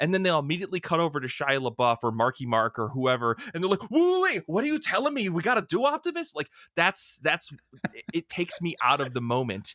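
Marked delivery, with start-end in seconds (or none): 3.9-6.3 put-on very high-pitched, poorly done Texas accent. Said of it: "That was a pretty good [name]".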